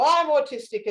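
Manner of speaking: booming voice. Retelling answering whispering classmates at school, in a big booming voice. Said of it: "in the biggest booming voice".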